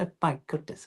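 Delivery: put-on super tight, breathy posh British accent. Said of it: "a kind of a posh British accent, um, but super tight".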